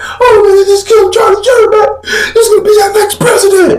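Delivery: very high, tearful blubbering wail. Retelling a man's reaction to news, imitating someone crying. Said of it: "He crying like".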